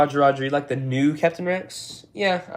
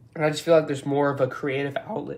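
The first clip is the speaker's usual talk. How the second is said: voice cracking and breaking mid-sentence; 3 dB quieter than usual. Talking to viewers about their channel, voice cracks. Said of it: "Voice crack, sorry".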